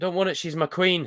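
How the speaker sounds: put-on Yorkshire accent. Reading a quoted line in a bad Yorkshire accent. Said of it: "I'm not good with Yorkshire".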